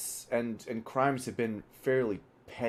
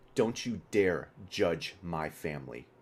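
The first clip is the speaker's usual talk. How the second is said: low voice ground out through clenched teeth; 5 semitones lower than usual. Pointing straight at the listener: through gritted teeth. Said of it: "and he just like with gritted teeth".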